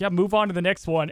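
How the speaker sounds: ordinary talk, nothing marked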